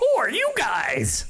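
high-pitched talking parrot voice. A storyteller voices a parrot looking down on the heroes: parrot voice. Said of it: "that's the voice I'm sticking with".

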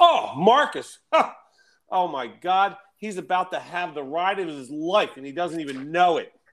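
wired, amped-up, high-pitched excited chatter. Retelling a man's reaction during a phone call, imitating an amped-up man. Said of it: "he's all amped up".

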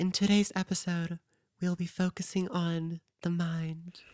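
soft, guided-meditation podcast host voice. Podcast host jokingly turns the show into a meditation podcast; meditation podcast voice. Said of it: "one of those like meditation podcasts that are like".

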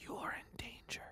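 hushed, very quiet, breathy whisper. A game master voices another whisper the player hears, whispering. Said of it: "You hear another whisper".

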